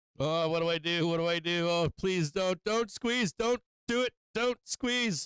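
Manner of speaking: mock frantic pleading, high, slow, climbing, drawn out. Acting out a trader's thoughts as price rises: imitating a panicking trader. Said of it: "I bet this is how half you think".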